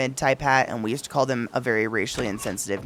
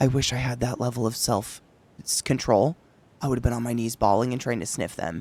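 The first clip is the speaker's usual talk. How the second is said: whispered speech. Retelling their own reply to a friend's message: retelling a whispered reply. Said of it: "To which I responded in a whisper".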